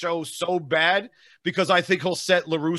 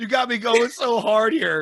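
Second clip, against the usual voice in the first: voice cracking from laughing; 5 semitones higher, 3 dB louder than usual. Cracking up at what the other person said, voice cracking. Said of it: "My voice is cracking".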